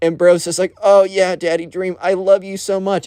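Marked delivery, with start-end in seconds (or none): 0.8-3.1 acted, full-on yelling. Retelling a guy yelling to a body pillow in class: retelling a yell. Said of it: "He's full on straight up yelling this".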